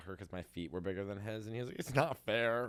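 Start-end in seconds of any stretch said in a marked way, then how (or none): 1.8-2.7 acted tearful, sulky, whiny crying delivery. Retelling an older brother's complaint about bigger feet: imitating crying brother. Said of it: "crying at a Foot Locker".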